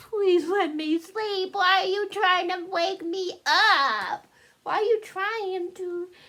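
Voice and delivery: put-on very high, slow, drawn-out little-girl baby voice. Voicing Anya while putting her to sleep: voicing Anya. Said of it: "You're like".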